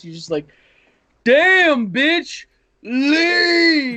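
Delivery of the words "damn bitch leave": very high, shrill, full-throated yell, "leave" drawn out. Retelling what a buddy yelled on a loud, drunk night: retelling a shout at full volume. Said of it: "top of his lungs".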